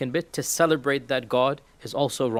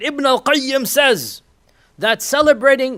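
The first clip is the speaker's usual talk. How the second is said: mock fiery delivery, higher and louder; 11 semitones higher, 8 dB louder than usual. Quoting an overzealous young YouTuber's claim: imitating a fiery voice. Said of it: "in his fiery voice".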